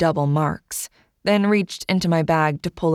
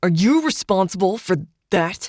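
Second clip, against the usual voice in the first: bossy, self-important, officious, demanding tone; 3 semitones higher than usual. Reading a story, voicing an officious agent questioning the narrator: officious demanding. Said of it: "demanded the officious one".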